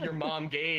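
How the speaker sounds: ordinary talk, nothing marked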